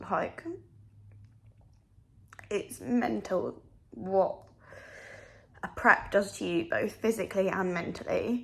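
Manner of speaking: talking through tears. Talking about a hard day of prep, crying while talking. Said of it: "I know I'm crying right now".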